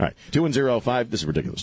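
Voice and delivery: ordinary talk, nothing marked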